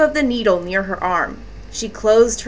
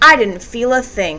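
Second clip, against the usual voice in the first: usual speaking voice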